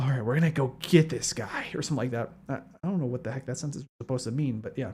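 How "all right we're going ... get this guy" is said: soft, low-key, hushed, half-whispery delivery. Showing the voice always associated with Shadow: half-whispery Shadow voice. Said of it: "a more whispery voice".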